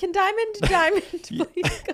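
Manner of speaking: high, public-address announcer paging voice. Imagining a name called at an airport gate: imitating an airport gate announcer. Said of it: "an announcer's like".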